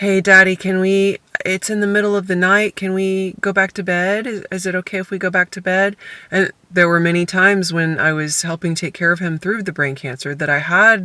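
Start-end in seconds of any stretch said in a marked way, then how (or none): 0.0-6.0 gentle, kind, caring, compassionate pleading tone. Caring for a father with brain cancer, the speaker is retelling a kind, compassionate plea. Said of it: "I say very kindly".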